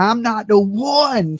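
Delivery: mock drawn-out, confrontational screaming, "one" stretched and stressed. Retelling a confrontation where Billy Joe got up in her face: imitating Billy Joe screaming. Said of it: "She's all screaming and spitting on me".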